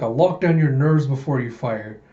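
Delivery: ordinary delivery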